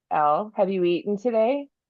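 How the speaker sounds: stern schoolteacher voice. Imitating a housemate, a former teacher, checking on the speaker, teacher voice. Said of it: "she'll get her teacher voice on".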